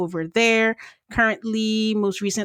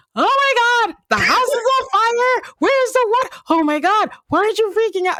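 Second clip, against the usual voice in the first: very high, loud, frantic panicky voice; 6 dB louder than usual. Contrasting own personality with a calmer person's, mock panic. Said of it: "like a worry wo- like word like me".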